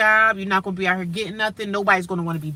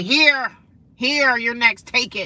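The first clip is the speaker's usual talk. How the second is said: put-on rude, nasty, drawn-out attitude; 3 semitones higher than usual. Retelling how a woman at the front desk handed over a clipboard: imitating a nasty attitude. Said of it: "You could tell she had an attitude".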